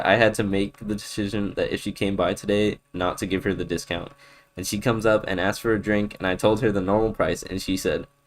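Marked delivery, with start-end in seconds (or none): none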